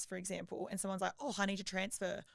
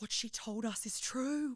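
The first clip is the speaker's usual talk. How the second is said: put-on child whisper, higher pitch; 3 semitones higher than usual. Retelling a child's reaction at the checkout: imitating a child whispering.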